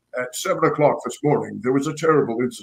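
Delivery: anchor-desk newscaster reading voice. Retelling a movie scene, the speaker quotes a character speaking in his news voice. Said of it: "practicing his news voice".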